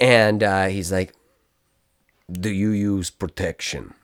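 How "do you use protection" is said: bad fake Russian accent, lower. Retelling what a very tall man asked, done in a bad russian accent. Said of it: "That's a bad accent".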